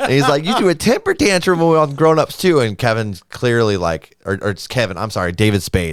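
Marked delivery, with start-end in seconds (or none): 0.4-2.6 put-on voice pushed very high and loud. Retelling Adam Sandler teasing David Spade on a show: Adam Sandler voice. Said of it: "You know how he talks like that?".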